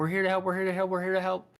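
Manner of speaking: repeated loud, high yelling. Game master voicing a character calling out while running, yelling. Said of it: "she's yelling in Draconic".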